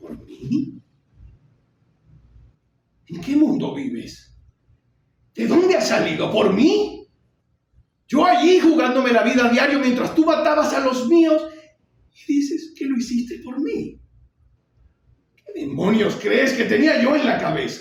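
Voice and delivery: furious theatrical voice. Performing the final monologue of Chris answering his father, enraged. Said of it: "Y él responde iracundo".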